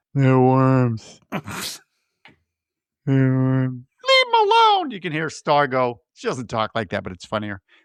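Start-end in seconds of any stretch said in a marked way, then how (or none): 0.2-4.9 put-on sloppy drunken voice, insistent. Retelling a movie scene where a wasted character speaks: imitating drunk. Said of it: "'cause he's wasted, he goes".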